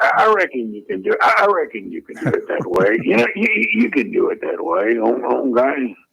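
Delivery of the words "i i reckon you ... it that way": stammering, stumbling put-on character voice, doubled words. Doing an impression of the character from the movie Sling Blade: Sling Blade impression. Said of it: "The other one I have is Sling Blade".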